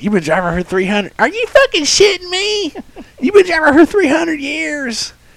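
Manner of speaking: mimicked high squeaky voice. Retelling what a driver said over the radio: imitating a squeaky voice. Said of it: "his little squeaky voice".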